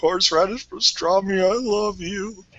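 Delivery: acted out, tearful, on the verge of crying. Retelling trying deli meats in the aisle, imitating own near-crying voice. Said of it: "almost crying in the aisle, going".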